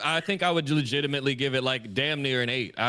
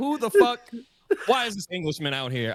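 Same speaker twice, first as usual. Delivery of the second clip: mock indignant, fuming, high-pitched angry outburst; 7 semitones higher than usual. Retelling a reaction to seeing a character appear: retelling own angry reaction. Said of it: "I was so angry".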